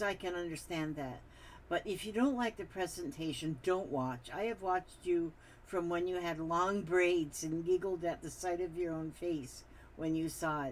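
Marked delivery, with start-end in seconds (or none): none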